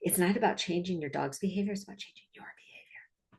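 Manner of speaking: hushed, quick, very soft stage whisper. Speaker explaining his method for dogs and their owners: whispering. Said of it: "I'm whispering like you can't hear me".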